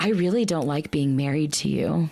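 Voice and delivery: put-on condescending tone. Retelling what a husband would say to his wife: imitating a condescending tone. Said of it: "Saying it in the most condescending tone".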